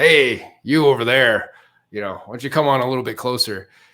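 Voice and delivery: loud, high-pitched yelling voice.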